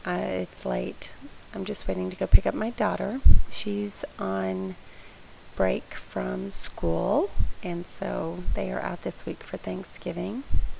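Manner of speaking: tired, creaky, worn-out late-night voice.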